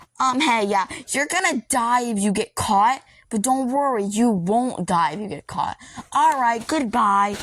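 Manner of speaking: derisive, mocking phone-message voice. Retelling what the fake phone guy from Into the Pit says: imitating the fake phone guy. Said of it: "the fake phone guy's like".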